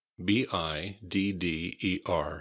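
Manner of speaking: normal talking voice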